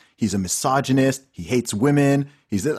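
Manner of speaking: ordinary talk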